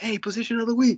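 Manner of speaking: high-pitched calling out.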